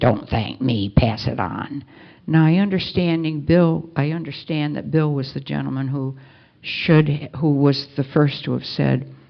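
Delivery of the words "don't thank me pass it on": low, gruff, growled voice. Retelling a man's reply when thanked for his help, Ebby's gruff voice. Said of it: "in his gruff voice".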